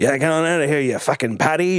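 silly, comical put-on English accent. Retelling a film scene where a man insults the departing character: comical English accent. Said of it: "this guy who has a comical English accent is like".

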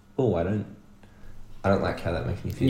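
ordinary delivery

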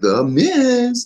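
very high, loud showman talk-show host voice, Miz stretched. Retelling how a ring announcer introduces a wrestler: imitating a talk show host announcement. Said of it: "literally like a talk show host".

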